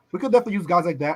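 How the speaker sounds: ordinary delivery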